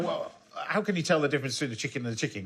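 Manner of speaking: plain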